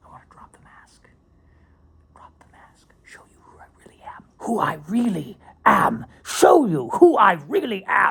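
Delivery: put-on loud, swooping, declaiming old British stage actor voice. Talking about being filmed, then drifting into an old british thespian voice. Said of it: "turning into a ninety-seven-year-old British thespian".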